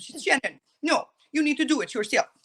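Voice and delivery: bad put-on French accent. Speaker quotes their Nana to a listener, bad French accent imitation. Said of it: "I'm terrible with my French accent".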